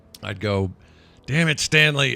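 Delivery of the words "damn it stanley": stifled, held-back, pitched-up half yell. Answering a megaphone call while the kids are asleep: half-yelled. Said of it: "I'd kind of yell it, but half yell it".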